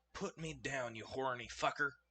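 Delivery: hushed half-whisper, very close to the ear. Narrator voicing a character half-whispering into the listener's ear: half-whispering. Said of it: "Helvetica whispers in your ear".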